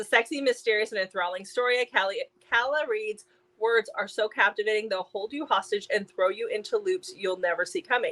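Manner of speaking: ordinary talk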